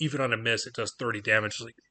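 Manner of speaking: ordinary talk, nothing marked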